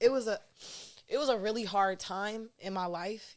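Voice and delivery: choked up, voice catching and breaking, near tears. Talking about a hard time after his brother passed away, choked up. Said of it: "I'm getting choked up".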